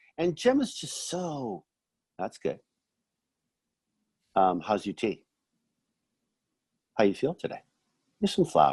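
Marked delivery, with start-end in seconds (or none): 2.2-8.7 play-acted unfussed, plain, businesslike matter-of-fact tone. Retelling a scene where Gemma hands over flowers: matter-of-fact Gemma voice. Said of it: "it's just so matter of fact".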